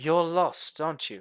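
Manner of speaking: perfectly calm and collected delivery. She steps forward to the approaching travelers and speaks: very calm. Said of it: "she basically says very calmly".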